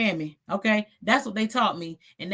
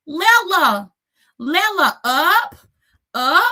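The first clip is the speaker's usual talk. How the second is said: put-on toddler voice, pleading, high-pitched and loud. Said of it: "he called me Lela".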